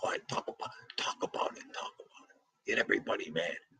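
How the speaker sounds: breathy, urging stage whisper. Showing how the speaker's father would react right now: imitating his father. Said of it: "My father would be going like this right now".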